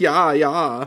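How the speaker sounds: put-on Dutch accent moan. Imitating the noise a man was making, moaning in fake Dutch accent. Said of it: "He's doing Dutch. He's going like".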